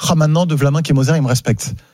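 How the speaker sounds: ordinary delivery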